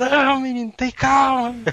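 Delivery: mock yelling. Retelling his mother's reaction while he sat in a shopping cart, imitating his mother shouting. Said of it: "Ela gritando lá".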